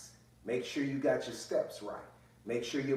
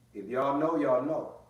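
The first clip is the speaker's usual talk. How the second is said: ordinary talk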